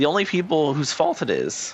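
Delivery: breaking, cracked voice, cracking up high. Upset at people blaming each other, speaking with a voice cracking. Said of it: "I just voice cracked".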